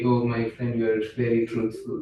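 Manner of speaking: ordinary talk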